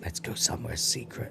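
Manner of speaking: very soft, hushed, breathy, secretive whisper. Retelling a scene where a character whispers in someone's ear: imitating a whisper. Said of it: "obviously she's whispering, like".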